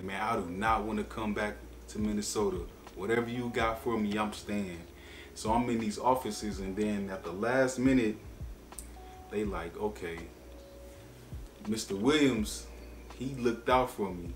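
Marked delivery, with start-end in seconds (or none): none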